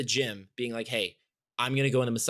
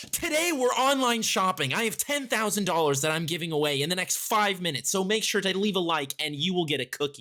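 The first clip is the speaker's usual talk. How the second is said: upbeat, high, hyped-up pitch, bursting with host enthusiasm; 7 semitones higher than usual. Redoing a video intro after being asked for more enthusiasm, enthusiastic. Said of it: "Where's the enthusiasm".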